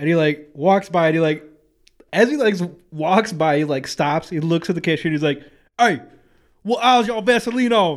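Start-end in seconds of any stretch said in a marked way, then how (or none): 5.8-8.0 menacing, confrontational, threatening tone, pitched up. Retelling a man's question to a cashier, in a mock-threatening aggressive tone. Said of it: "he said it like threatening".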